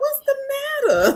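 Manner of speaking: very high infant-directed voice. Teasing the other speaker on camera: put-on baby talk. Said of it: "Like they talk to them little babies".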